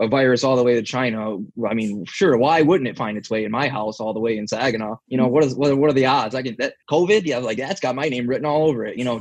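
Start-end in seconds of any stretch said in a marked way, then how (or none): none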